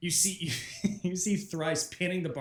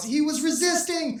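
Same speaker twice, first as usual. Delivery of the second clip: shrill yell, very loud and very high; 13 semitones higher, 8 dB louder than usual. Narrating a character falling back with a dagger, yelling in character. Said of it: "and yells".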